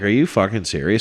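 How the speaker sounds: put-on angry disbelief. Retelling a woman who brought no money for a shared bill, mock-angry disbelief. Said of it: "So now I'm like angry".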